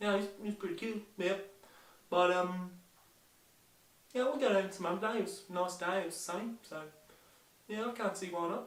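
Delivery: attempted New Zealand accent. Performer demonstrating an accent for the audience, in a new zealand accent. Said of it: "the accent I'll be doing today is New Zealand".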